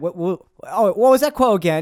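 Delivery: put-on Cockney accent. Imitating Churchill asking what the quote was: cockney Churchill voice. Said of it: "Why make him so cockney?".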